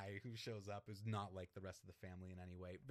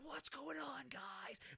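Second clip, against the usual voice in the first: put-on very high stage-whispered shout, whisper-yelling. Retelling a film scene breaking up a fight: imitating Michael Keaton whisper-yelling. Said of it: "he's whispering the whole time".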